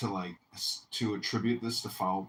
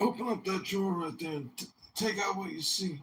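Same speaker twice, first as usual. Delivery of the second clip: put-on southern politician voice, higher; 11 semitones higher than usual. Answering a request to do a voice: Bill Clinton voice. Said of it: "Do the Bill Clinton voice".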